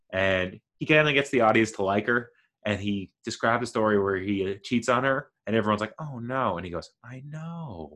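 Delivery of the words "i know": hushed, very quiet, mournful, sad, removed little voice. Describing a performer's bit to an audience, imitating his sad voice. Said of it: "in this like sad voice".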